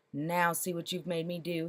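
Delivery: cross, irritated tone. Reading a story aloud, the mayor scolding after a startle: cross. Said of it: "he said crossly".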